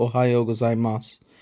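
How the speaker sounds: ordinary talk, nothing marked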